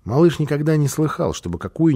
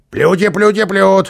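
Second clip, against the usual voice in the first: irritated growling character voice, much higher, louder; 6 semitones higher, 6 dB louder than usual. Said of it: "раздраженно прорычал Карлсон".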